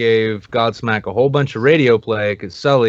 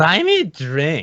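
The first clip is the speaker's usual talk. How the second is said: put-on play-acted, very slow, high, slurred drunk woman's voice; 6 semitones higher than usual. Retelling what a drunk woman said to a buddy: imitating a drunk woman. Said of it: "this drunk as fuck skank comes up and she's like".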